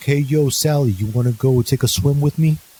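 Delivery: forward New York voice. Retelling how Glazer asked Sally to swim, Glazer's New York accent. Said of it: "the only one with a New York".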